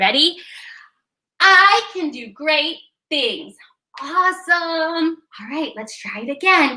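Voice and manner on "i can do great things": loud, big, booming shout. Leading a practice line loud enough to be heard from the highway: shouting loud. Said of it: "So we have to shout it loud".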